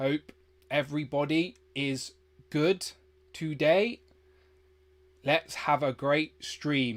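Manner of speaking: slowed-down, deliberate talk. Stream guest, just told they talk too fast, talking slower. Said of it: "Okay, I'll talk slower".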